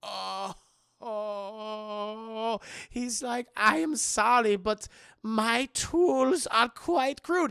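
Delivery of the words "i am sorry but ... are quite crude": slow, loud, put-on German accent. Retelling what a surgeon said after the bandages came off; german accent. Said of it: "the surgeon who has a German accent".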